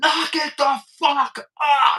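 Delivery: loud scream, barked out. Retelling walking in and yelling at a group to stop, retelling a loud scream. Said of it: "as loud as I could scream".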